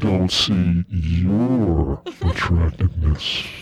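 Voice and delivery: very low, eerie, creepy voice, "your" stretched out. Speaker chooses to say the advice the creepy way, creepy voice. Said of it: "so creepy".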